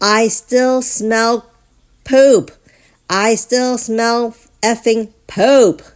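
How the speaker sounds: put-on enraged bellowing roar, loud and high. Retelling a man slamming the dash and roaring at the speaker's mother: imitating Bobby's furious roar. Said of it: "looked at my mother and roars".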